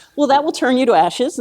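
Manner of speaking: ordinary delivery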